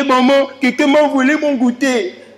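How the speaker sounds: put-on slow, tearful, weepy little child's whine. Describing a child who comes home from school every day: imitating a crying child. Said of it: "il est toujours en train de pleurer".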